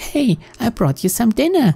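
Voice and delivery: put-on high-pitched little-girl voice. Giving the little girl character a voice as she brings dinner, Yumi's high little-girl voice. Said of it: "I guess I must give her one".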